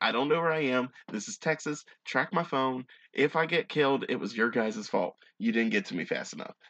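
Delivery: normal talking voice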